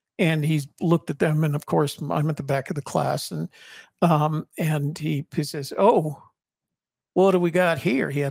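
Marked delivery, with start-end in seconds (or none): 5.8-8.1 loud, overdone Southern drawl, laid on thick. Retelling what a sergeant teacher said in class: exaggerated Southern accent. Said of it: "he had a Southern accent".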